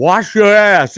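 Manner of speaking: full-throated, loud, high yell, blurted out. Telling of a Vegas show with friends, act out the performer's shout, imitating a yell at top of lungs. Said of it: "yells out, top of his lungs".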